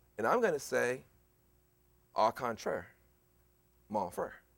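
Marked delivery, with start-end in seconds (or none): 2.2-4.4 put-on Southern American accent. Speaker rebutting an imagined objector, said in a Southern accent. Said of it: "Said with Southern accent".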